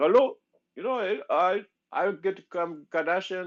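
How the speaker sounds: put-on heavy Indian accent pitched very high. Describing how Sahil came in and spoke, doing Sahil's thick Indian accent. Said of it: "with that like thick Indian accent".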